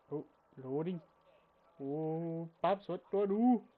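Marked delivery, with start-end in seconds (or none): 1.8-3.6 put-on ridiculous Canadian accent. Voicing Sans asking Paps what to do: Sans voice with ridiculous Canadian accent. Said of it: "stop doing that ridiculous Canadian accent".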